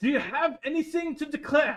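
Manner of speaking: put-on very high, loud French-Swedish mixed accent. Playing a man who approaches and questions a traveller, French-Swedish accent. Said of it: "French mixed with Swedish".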